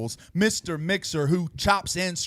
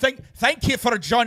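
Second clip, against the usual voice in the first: put-on Scottish accent sounding Irish, much higher; 6 semitones higher than usual. Hosts riff on a Scottish character and one tries it: attempted Scottish accent. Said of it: "that's more Irish".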